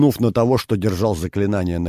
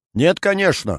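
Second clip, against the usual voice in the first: very high, startled, surprised outcry; 9 semitones higher than usual. The narrator, accused of spying, answers the accuser with a surprised exclamation. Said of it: "удивленно воскликнул я".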